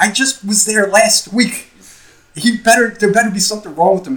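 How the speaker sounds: put-on high yelling, like a mother. Retelling a mother's phone call with the nurse: imitating mother yelling. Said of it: "mother yelling into the phone going".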